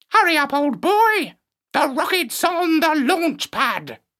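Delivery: very high, squawking parrot voice. Narrator reading a parrot calling to the dog narrator, in a squawking parrot voice. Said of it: "And he squawked".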